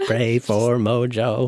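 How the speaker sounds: robotic toy-like voice. Recalling a scene where a helper monkey types out a message, use a Speak & Spell voice. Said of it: "he types it out on the speak and spell".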